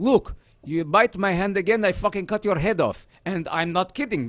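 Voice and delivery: put-on Russian-tinged accent. Acting out a threat to someone who bites: sounding Russian. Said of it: "You're starting to sound Russian".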